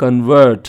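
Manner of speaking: convert stressed on second syllable. Teacher showing verb stress, stress on second syllable vert. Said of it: "second syllable మీద stress ఇచ్చినట్లయితే".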